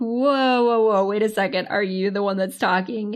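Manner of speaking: normal talking voice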